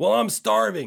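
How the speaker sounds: loud, high, slow yell.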